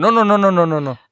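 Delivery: urgent high pleading. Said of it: "Y luego le dijiste".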